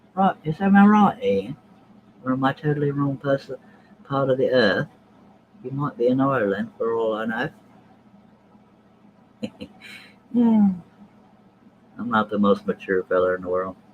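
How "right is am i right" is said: high, loud, mocking put-on voice. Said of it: "sort of talks like this".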